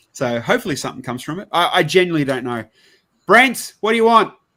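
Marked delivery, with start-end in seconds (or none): 3.3-4.3 put-on loud, high-pitched Australian accent. Speaker shoos away a latecomer on stream: Aussie dad accent. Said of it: "Sound like an Aussie dad".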